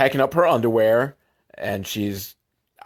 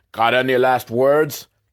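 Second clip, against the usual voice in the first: bad, clumsy, put-on fake Russian accent; 3 dB louder than usual. Retelling a movie scene, quoting a Russian mobster threatening Dolph, in a bad Russian accent. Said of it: "I'm not very good at the Russian accent".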